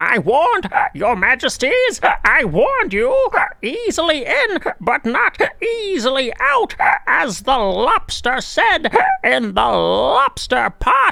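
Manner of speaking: very high-pitched talking raven voice. Finally doing the raven line that chat asked for: raven voice. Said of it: "raven voice and not doing it".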